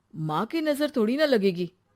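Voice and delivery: ordinary talk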